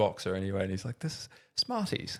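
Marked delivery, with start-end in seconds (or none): 1.0-2.2 hushed, put-on, really posh upper-class voice. Retelling a famous boxer's video about Smarties, in a really posh voice. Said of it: "in this like really posh voice".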